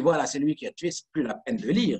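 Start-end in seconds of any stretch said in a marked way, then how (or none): none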